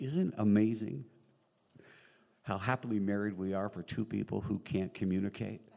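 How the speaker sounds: normal talking voice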